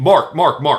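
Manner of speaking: stern, firm, almost scolding cut-in. Showing how to stop someone with their name: firm, almost scolding. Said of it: "a very firm, almost scolding use of their name".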